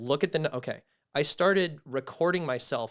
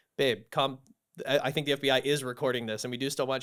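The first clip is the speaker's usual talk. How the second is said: usual speaking voice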